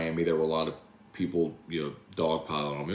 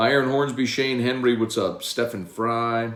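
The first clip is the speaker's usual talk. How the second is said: normal talking voice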